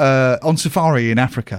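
ordinary talk, nothing marked

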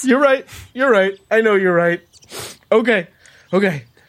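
weepy, tearful, sobbing, crying through the words. Told by a companion that the crying is getting ridiculous, agreeing, crying. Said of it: "this crying is just getting ridiculous".

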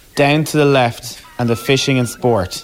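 projected, very loud voice. In a library, told to repeat her instructions, speaking really loudly. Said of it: "repeat her instructions only really loudly".

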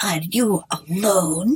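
put-on rough, harsh, forbidding old woman voice. Narrator voicing the old woman questioning the boy in the cottage; harsh, deep tone. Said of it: "in a harsh, deep tone".

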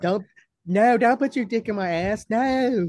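wimpy, limp, weak-sounding put-on Southern accent. Speaker mimicking people from North Florida, imitating a wimpy Southern voice. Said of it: "that's just like a pussy Southern voice".

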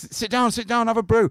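put-on very high, very loud host voice. Retelling greeting police at his door while gurning on a pill: imitating himself gurning on a pill. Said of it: "gurning. I was like".

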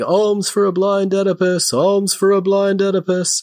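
loud, high, yelled street-vendor calling-out. Retelling a movie scene where a blind beggar calls out: imitating someone yelling. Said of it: "And he's yelling".

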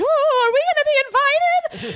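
very high, crazed, frantic excitement with stretched-out "we". Retelling a scene, imitating Mrs Bennet acting crazy. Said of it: "she's being all crazy".

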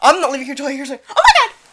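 put-on scared man's voice, high-pitched. Retelling a scare during a game, imitating Zach's scared voice jumping up. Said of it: "His voice goes up 3 octaves".

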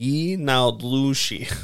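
Brooklyn-accented speech. Asked the Navajo word for skinwalker, answering in a Brooklyn accent. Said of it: "My best Brooklyn accent".

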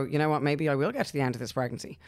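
ordinary talk

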